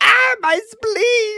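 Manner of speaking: very high, shrill, very loud put-on cultist voice. Trying out character voices, doing a passable cultist voice. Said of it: "I can do a passable cultist voice".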